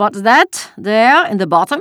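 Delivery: tense, strained, high, very loud voice. A soldier searching a basket questions Anne-Marie, in a tenser voice. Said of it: "he asked in a different, tenser voice".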